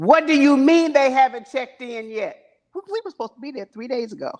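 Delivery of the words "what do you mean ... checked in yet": mock loud screaming at the top of the lungs. Retelling arriving at a hotel lobby late: imitating Tom screaming. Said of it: "Tom's voice screaming at the top of his lungs".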